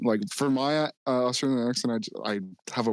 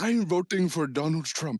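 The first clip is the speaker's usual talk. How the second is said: Ugandan accent, pitched up; 6 semitones higher than usual. Trading voices with someone who is attempting one too, in a Ugandan Obama voice. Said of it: "Ugandan Obama".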